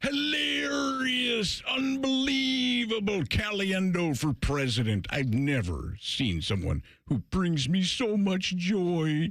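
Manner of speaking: very slow, high, stretched-out joyful drawl. Retelling the reaction of the impersonated sportscaster, imitating Bill Walton. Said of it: "when he would do that thing".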